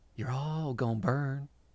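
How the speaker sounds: whispering. Narrating, the storyteller voices a woman leaning in close: whispering. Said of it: "and then she whispers".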